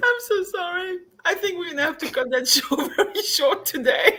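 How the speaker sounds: helpless fit of high, breaking laughter.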